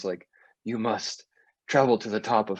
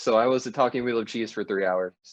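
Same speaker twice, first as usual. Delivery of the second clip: ordinary talk, nothing marked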